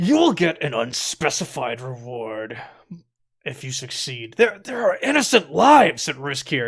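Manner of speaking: fuming, seething restraint through clenched, gritted teeth. Maximilian replies after being asked for more money, through gritted teeth. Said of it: "like through gritted teeth".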